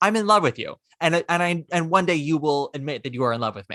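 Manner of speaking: plain, deadpan, matter-of-fact, level delivery. Retelling how Linda tells Mickey she loves him: imitating Linda saying it matter-of-factly. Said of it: "She says it so matter of factly".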